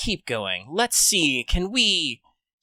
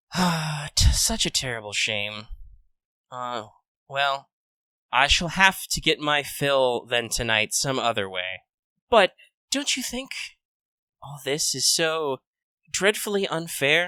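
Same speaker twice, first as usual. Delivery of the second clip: weary, sighing, put-upon complaining tone. Voicing a female character who leans back, speaking with a sigh. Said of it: "She kind of sighs and kind of leans back and is like".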